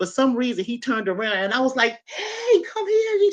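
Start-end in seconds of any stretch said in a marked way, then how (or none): 2.1-3.3 mock all-out shriek, very high. Retelling calling her husband over from the porch: retelling own screaming. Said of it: "I was screaming so hard".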